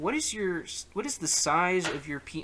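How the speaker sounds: normal talking voice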